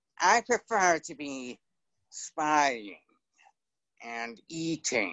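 whiny cartoon rat voice with big pitch swings. Recalling Charlotte's Web, doing the rat's line: Templeton the rat impression. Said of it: "Templeton, the rat".

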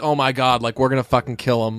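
put-on competitive, fired-up, pumped-up boastful voice. Retelling a player's first words to the team, imitating a competitive fired-up boast. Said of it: "a competitive kind of way".

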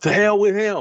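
very high-pitched yell. Acting out what a man yelled about his father; retelling a yell. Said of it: "and he yells".

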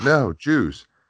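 little high-pitched voice. Retelling a clip where Andrew offers water and a voice answers: little high-pitched voice. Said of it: "you hear the little high-pitched voice go".

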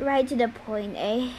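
ordinary delivery

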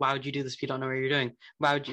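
put-on snippy, rude, petulant, like a twelve-year-old. Retelling a comics scene at a festival, imitating Toph being petulant. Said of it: "Toph gets very petulant about it. She's like".

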